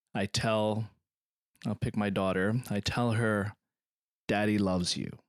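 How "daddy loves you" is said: sentimental, heartfelt tone. Acting out a father talking to his daughter: sentimental. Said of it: "in my sentimental, deep moment with my child".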